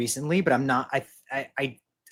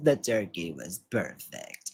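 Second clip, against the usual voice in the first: very rough, hard, rasping voice; 7 semitones lower, 7 dB quieter than usual. Quoting a movie line for a guessing game: raspy Maddie voice. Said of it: "It's like a very raspy".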